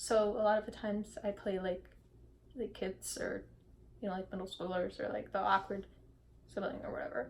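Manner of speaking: low, very quiet, barely audible mumble. An actor describes the roles they often play, muttering.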